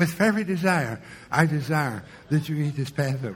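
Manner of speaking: soft, quiet, meek, mousy near-mumble. Acting out Jesus speaking too softly for a guy at the end to hear: meek, quiet Jesus voice. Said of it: "speak up, Lord, I didn't hear".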